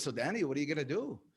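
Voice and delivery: put-on slight gentle French accent. Speaker quotes his father at school graduation time, imitating his dad's accent. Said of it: "I use his little accent".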